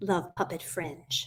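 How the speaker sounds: slow soft stress on "love".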